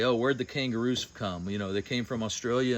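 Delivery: ordinary talk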